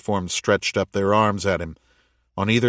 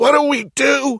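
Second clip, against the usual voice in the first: very high, wheezy, drawn-out words; 7 dB louder than usual. Anna, just after Daniel cries out to be pulled up, wheezing. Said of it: "wheezed Anna".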